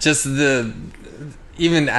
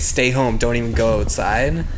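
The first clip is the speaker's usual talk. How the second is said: ordinary talk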